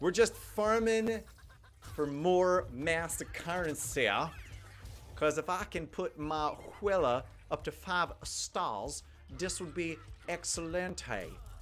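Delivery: slow southern debutante voice.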